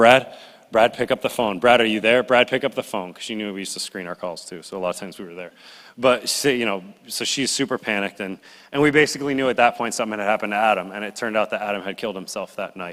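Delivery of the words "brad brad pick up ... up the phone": ordinary talk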